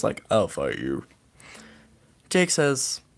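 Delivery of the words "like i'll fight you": very deep, very low put-on voice. Recounting a scene where the biggest man challenges another man, in a deep voice. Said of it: "in a pretty deep voice".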